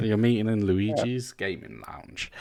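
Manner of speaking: suggestive, sultry, seductive porno bedroom voice. Joking that the others are meeting in a gaming lounge: porno voice. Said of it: "Why did you have to say it in a porno voice?".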